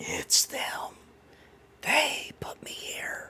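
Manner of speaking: very quiet, faint, breathy whisper. Game master voicing a voice from deep in the ground after a tremor, much quieter voice. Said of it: "a voice spews, this time much quieter".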